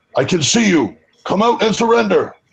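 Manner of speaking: very high, threatening, intimidating yell. Making an intimidation roll in the game, in character: yelling. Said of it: "I'm gonna yell".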